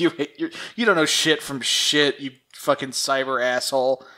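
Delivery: ordinary delivery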